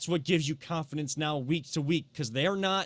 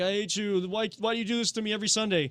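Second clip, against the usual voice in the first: exasperated yell, higher pitched; 5 semitones higher than usual. Quoting Mike Polk Jr.'s famous YouTube clip, imitating him yelling. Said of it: "he's yelling and saying like".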